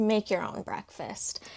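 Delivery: ordinary delivery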